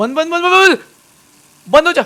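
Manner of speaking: frantic, high, loud, panicked yelling.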